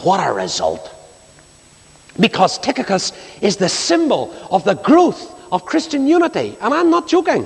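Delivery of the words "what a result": very low Northern Irish accent delivery. Preaching about Tychicus, the speaker paraphrases in Northern Irish dialect. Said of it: "to paraphrase it in Northern Irish dialect".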